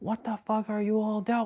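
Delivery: very high, held-back, muted yell, cut off. Retelling an anime scene that breaks an illusion: imitating Ichigo yelling. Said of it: "he was yelling".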